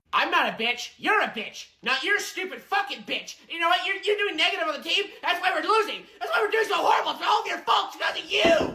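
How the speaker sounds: furious shouting. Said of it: "can you stop yelling and threatening children".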